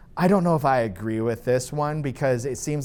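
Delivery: plain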